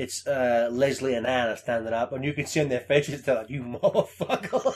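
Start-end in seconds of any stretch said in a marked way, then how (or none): 3.5-4.7 play-acted, annoyed, angry, pitched-up voice. Retelling castmates' reaction to being broken: imitating angry castmates. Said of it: "angry with the fact that they".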